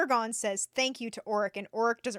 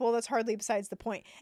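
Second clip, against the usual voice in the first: normal talking voice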